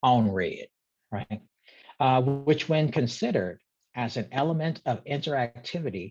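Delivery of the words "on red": Southern US accent with American Southern pronunciation.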